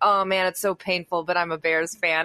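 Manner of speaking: ordinary talk, nothing marked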